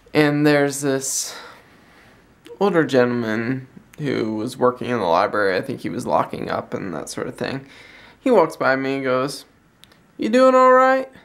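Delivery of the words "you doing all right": put-on heavy Scottish accent, pitched very high. Retelling an older library worker checking on them: imitating thick Scottish accent. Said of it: "he's got this thick Scottish accent".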